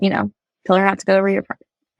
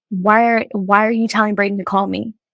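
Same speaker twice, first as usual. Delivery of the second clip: play-acted angry, confronting, accusing tone. Retelling an argument with Josh at night: imitating own angry past words. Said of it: "got mad at Josh and was like".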